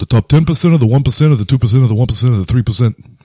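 loud mock ranting voice.

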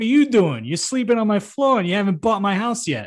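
put-on New Jersey accent with wiseguy delivery. In an acted scene, one character confronts another in his house; Jersey accent. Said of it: "I don't know why he has a Jersey accent".

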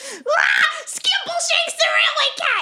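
high, shrieking, panicked yell. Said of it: "and just yell".

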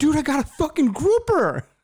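mock thrilled, very high, swooping, super excited exclamation. Retelling a fishing trip, imitating Mike's excitement about his catch. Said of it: "with the most excited face".

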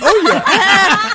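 nervous voice jumping to very high pitch. Speaker admitting getting nervous talking to women, voice going high. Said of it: "Your voice went high and everything".

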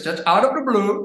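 sudden switch into Indian accent. Showing off switching accents on request, speaking in an Indian accent. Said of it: "I can switch to Indian like this".

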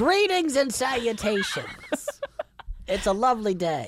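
silly cartoon voice. Co-host greeting listeners when asked to say hi, in a cartoon character voice. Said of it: "Why do you talk like a cartoon character".

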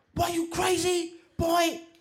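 play-acted very high, loud, shrill, drawn-out scolding scream. Retelling a grandfather scolding about the stolen money: imitating grandfather screaming. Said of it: "he was screaming".

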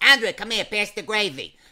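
put-on New Jersey mobster accent. Speaker recalls how his cousins all talked to him: Sopranos-style accent. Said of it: "they all talk like the sopranos".

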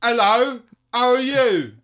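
shrill, booming, very high, very loud put-on Essex accent. After hearing Essex was voted the UK's sexiest accent, doing an Essex accent. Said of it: "number one was Essex".

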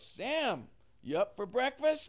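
shrill, loud, high-pitched yell. Recalling his mom calling him for breakfast one morning, imitating mom yelling. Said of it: "my mom yells".

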